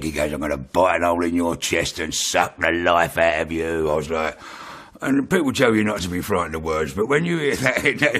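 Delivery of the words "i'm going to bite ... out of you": acted voice from hell. Retelling what a man said to them, imitating a voice from hell. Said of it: "it just sounded like it came from hell".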